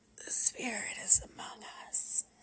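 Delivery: over-the-top, raspy, rasping whisper. Reading a tarot-card scene, the narrator voices a woman's line in a raspy whisper. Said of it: "she rasped".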